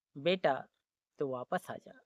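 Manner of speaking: low, soft, gentle voice.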